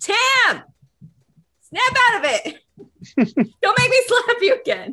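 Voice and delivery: magically amplified, booming yell, very high. A player's character calls out to Tim with a magically amplified voice: booming magical shout. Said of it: "boom her voice 3 times as loud and just say".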